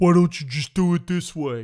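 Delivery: very loud, big, thick-headed dumb voice. Speaker mimicking people in the comments; mocking big dumb voice. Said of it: "in their big dumb voices going".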